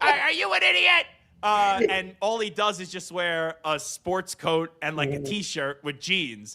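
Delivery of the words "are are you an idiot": very high, rough yelling. Retelling a college Halloween costume, yelling at people: yelling Jon Taffer impression. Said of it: "I dressed up as John Taffer, and I just yelled at people".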